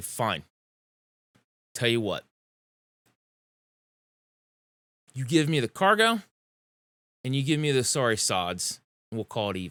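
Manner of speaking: irritated, put-out, grudging tone. Voicing a character settling a cargo deal, annoyed. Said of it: "She'll just kind of get annoyed".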